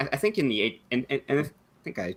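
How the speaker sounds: stuttering, stammering speech. Explaining a company's ownership to another speaker, stuttering. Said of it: "sorry, I'm stuttering".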